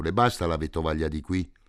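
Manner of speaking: usual speaking voice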